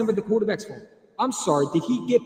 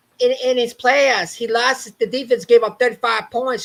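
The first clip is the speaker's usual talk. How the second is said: loud, mocking little-kid voice; 6 dB louder than usual. Mocking someone the speaker is done listening to, in a little kid voice. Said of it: "put it in a little kid voice".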